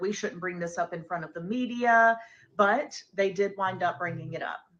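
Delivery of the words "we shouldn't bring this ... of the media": ordinary delivery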